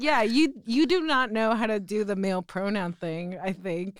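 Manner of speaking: ordinary talk, nothing marked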